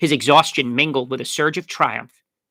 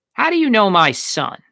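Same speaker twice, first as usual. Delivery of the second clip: insistent, demanding tone, higher pitch; 7 semitones higher, 4 dB louder than usual. Reading a story aloud, a stoker confronting a young stranger: demanding. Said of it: "the man demanded".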